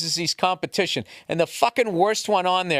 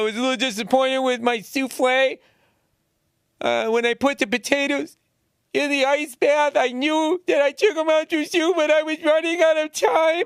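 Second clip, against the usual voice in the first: mock weepy, tearful, high crying child's voice; 8 semitones higher than usual. Mocking the kids on that show, imitating a crying child. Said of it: "these kids are like crying, going like".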